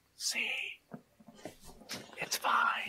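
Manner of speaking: hushed, unvoiced whisper. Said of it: "And I'll whisper from my hiding spot".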